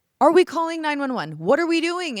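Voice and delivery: very high, demanding, shouted delivery. Retelling a house fire, imitating own past shouting at the other speaker. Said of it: "shouting at you".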